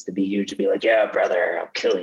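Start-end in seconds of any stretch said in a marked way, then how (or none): 0.8-2.0 rough, gravelly seventies-style pro wrestler voice. Imitating a huge seventies pro wrestler: gravelly pro wrestler voice. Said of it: "He's got the gravelly voice".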